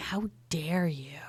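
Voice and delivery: gentle, soft, quiet, hushed delivery. Narrating a role-playing game, voicing a speaker in a soft voice. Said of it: "A soft voice going".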